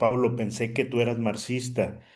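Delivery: normal talking voice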